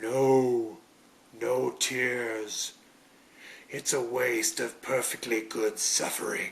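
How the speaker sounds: slow character voice with long drawn-out "no". Ending an episode with an out-of-context quote, in Pinhead voice. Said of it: "I tried to say it in the Pinhead voice".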